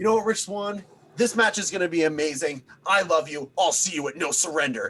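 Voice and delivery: super fired-up, loud, high, hyped wrestling promo. Retelling a wrestler's promo to a rival: imitating Tommy Dreamer's fired-up tone. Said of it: "In, like, that tone".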